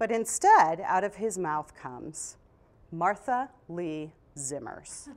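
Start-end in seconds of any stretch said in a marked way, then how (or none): 2.9-5.1 put-on stern father voice, quieter. Retelling the father's reaction to the fight, imitating a stern father. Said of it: "when all three names got used".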